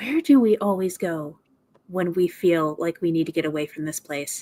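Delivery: fast, hushed whisper. Player's character leaning in close to another character, whispering. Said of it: "I'm gonna whisper".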